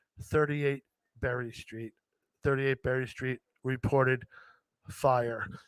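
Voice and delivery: hushed, half-whispered delivery. Recalling night fire calls on the intercom, the speaker half-whispers into the microphone. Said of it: "I would have to whisper into the microphone".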